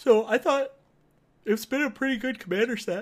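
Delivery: words dragged, stretched through a very high yawn. Speaker in a conversation, talking through a yawn. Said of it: "Pardon me for the yawn".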